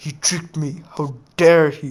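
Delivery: voice full of anger, acted out, outburst. Retelling a story, voicing Madara after a betrayal: Madara acting angry. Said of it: "Madara got angry and he was like".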